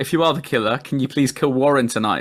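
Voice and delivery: normal talking voice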